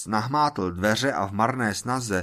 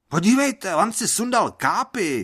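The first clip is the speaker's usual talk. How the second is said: very high shouted outcry; 10 semitones higher, 4 dB louder than usual. Reading a story where someone in a crowd calls out: shouting out. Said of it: "vykřikl někdo".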